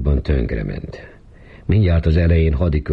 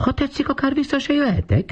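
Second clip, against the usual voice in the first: mock, very high, swooping, sing-song whine. A wife mocks someone to her husband, whining in Katica's voice. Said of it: "Katica hangját utánozva sápítozott".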